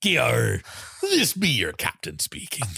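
swooping pirate captain voice. Joking about airline pilots, the speaker plays the captain announcing in a pirate voice.

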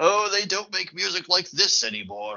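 put-on high, posh upper-class British lilt. Quoting a stiff, posh boss from a film: posh upper-class British voice as Dalby. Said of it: "very upper class Brits".

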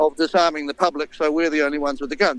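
ordinary delivery

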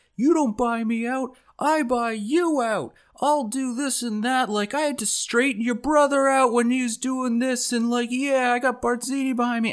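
very high-pitched ranting, raving yell. Comparing which character is scarier, imitating Moe Greene ranting and yelling. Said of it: "ranting and raving and yelling".

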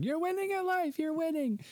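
acted, very high-pitched screaming cheer. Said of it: "I did the same thing".

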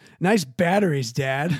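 put-on innocent, guileless, wide-open ten-year-old child tone. Retelling a ten-year-old's remark to a clearly angry dad: imitating an innocent young kid. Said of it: "It's like a ten-year-old".

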